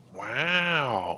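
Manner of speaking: "wow" very soft and drawn out. Doing an impression after mentioning Mobius: Owen Wilson 'wow' impression. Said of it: "That's my impression".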